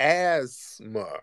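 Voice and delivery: strong stress on ass in asthma. Questioning the other speaker: stress on ASS in asthma. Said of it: "Emphasis on the ass".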